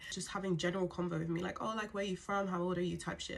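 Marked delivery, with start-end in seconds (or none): none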